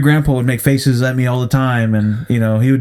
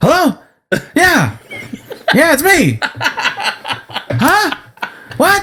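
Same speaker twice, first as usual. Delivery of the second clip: very high, very slow dad voice. Showing how his dad would answer the phone, imitating his dad. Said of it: "That is your dad, though".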